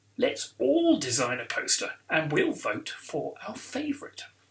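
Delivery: ordinary delivery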